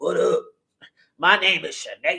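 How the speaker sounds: gruff, rough, deep voice. Describing people who transition but keep a deep voice, imitating a rough deep voice.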